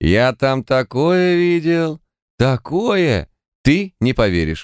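high-pitched, overfed, sated cat voice. The clown waves at the cheater and announces, like a cat stuffed with cream. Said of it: "голосом кота, обожравшегося сметаны".

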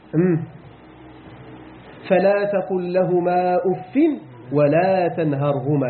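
plain

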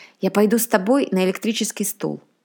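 ordinary delivery, nothing marked

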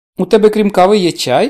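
loud, astonished tone with a sarcastic, wry edge. A mother answers her daughter's offer of tea, surprised and a bit sarcastic. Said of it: "здивовано й дещо саркастично перепитує мати".

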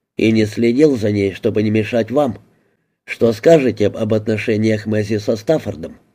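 ordinary delivery

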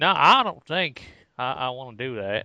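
worst possible, terrible put-on Southern accent. Mocking the other speaker's reply in the worst possible Southern accent. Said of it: "It's my worst possible Southern accent".

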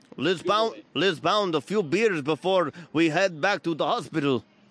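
put-on Russian accent. Taking a turn in an accent game: put-on russian accent. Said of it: "The accent that you will be doing is Russian".

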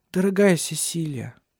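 gently restrained, understated, low-key delivery. Narrating a woman holding Cecilia's hands and addressing her, spoken quietly. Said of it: "тихо произнесла она".

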